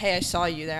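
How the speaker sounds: ordinary talk, nothing marked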